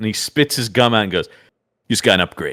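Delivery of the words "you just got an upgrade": put-on smug superhero voice, lower. Retelling a movie moment as Guy Gardner: imitating smug Guy Gardner. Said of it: "he really believes he is way cooler than Superman".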